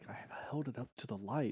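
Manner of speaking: timid, meek whisper, very quiet, barely audible. Retelling a terrified woman's honest answer, imitating a meek whisper. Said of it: "she whispers it so meekly".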